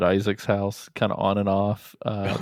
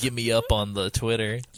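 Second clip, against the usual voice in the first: slow, suggestive, pervy-sounding tone. Teasing a guest by imitating how he just asked for follows: imitating Isaac. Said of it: "Isaac's like".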